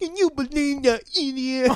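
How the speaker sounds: loud, very high, put-on deaf-speech voice. Retelling a tense car ride, quoting the driver; imitating a deaf man's voice. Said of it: "in his deaf voice".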